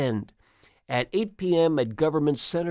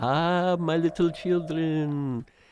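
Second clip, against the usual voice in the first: vampire voice with a Romanian accent. Speaker joking that something sounds like it's from Dracula, Dracula Romanian accent. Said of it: "talking in a Romanian accent".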